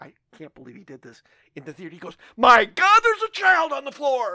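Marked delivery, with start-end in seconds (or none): 2.4-4.3 very loud, high-pitched, drawn-out top-of-the-lungs yell. Speaker retells what their friend yelled in the theater, retelling a shout at top of lungs. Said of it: "at the top of his lungs".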